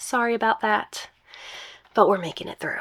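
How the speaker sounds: slightly rough, gravelly voice. Host apologizing for an allergy-worn voice before the next story, gravelly voice. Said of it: "I sound kind of gravelly today".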